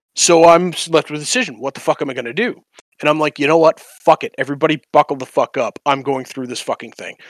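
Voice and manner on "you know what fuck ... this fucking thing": usual speaking voice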